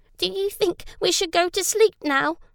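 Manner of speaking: anxious, uneasy, quick and high-pitched. In a story, Ella asks the others a question at bedtime, nervously. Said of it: "asked Ella nervously".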